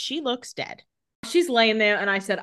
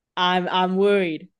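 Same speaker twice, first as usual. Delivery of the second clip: ordinary delivery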